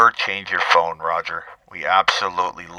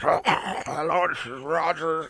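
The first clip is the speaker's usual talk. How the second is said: put-on garbled phone voice, higher and quieter; 9 semitones higher, 6 dB quieter than usual. Imitating a caller who sounds like he's eating his phone. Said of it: "Roger sounds like he's eating his phone".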